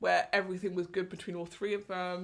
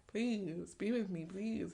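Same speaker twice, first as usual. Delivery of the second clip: put-on begging and imploring, pleading voice; 5 dB quieter than usual. Retelling how both girls begged him: imitating begging. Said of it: "Begging him".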